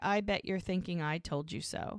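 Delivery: ordinary talk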